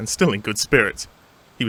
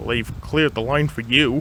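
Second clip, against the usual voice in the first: plain reading voice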